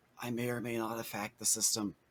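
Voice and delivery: soft, hushed, confiding stage half-whisper. Voicing a character leaning close to another to confess: half-whispering in character. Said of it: "Ram gets very close to Smalls and whispers".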